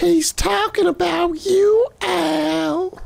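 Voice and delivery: very high, rough, creaky cartoon pig voice. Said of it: "that's the pig's voice".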